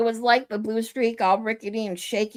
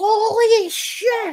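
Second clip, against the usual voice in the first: put-on shrill terrified shriek, holy long and drawn out; 11 semitones higher, 4 dB louder than usual. Recalling hanging over the first hill at age fifteen: retelling a scream. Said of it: "and I just screamed".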